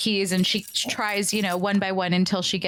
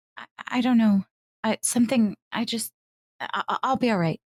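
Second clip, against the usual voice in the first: badly rattled, halting, stammering delivery; 2 semitones higher than usual. Voicing a character asked if she is okay after a creature dies: really shaken. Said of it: "appears to be really shaken".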